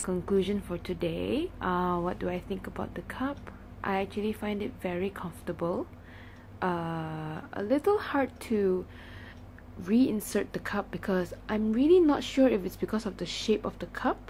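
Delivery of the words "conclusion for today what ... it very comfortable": much quieter, hushed, soft voice. Speaking at night while mom sleeps next door; hushed voice. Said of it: "so that's why I'm speaking like this".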